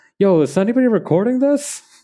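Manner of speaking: high-pitched excited shout. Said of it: "somebody yelling out".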